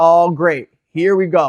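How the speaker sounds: put-on, slightly sarcastic tone. Recalling waking up on day three, the speaker retells his reaction: retelling own sarcastic reaction. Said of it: "Kind of sarcastic a little bit".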